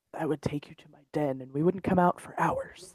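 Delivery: low, hushed whisper under the breath. Told by the others that he has to whisper it, a character answers, whispering. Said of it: "You have to whisper it".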